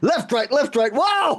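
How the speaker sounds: acted, over-the-top startled cry, very high pitched. Retelling the driver's reaction after nearly crashing: exaggerated imitation of a shocked driver. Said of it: "I'm obviously exaggerating".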